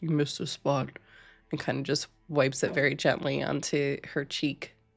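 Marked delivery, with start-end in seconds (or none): 0.0-0.9 low rumbling voice from the chest. Voicing a character who speaks after the makeup is applied: low rumbling voice. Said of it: "a low rumble from Thorbeer who goes".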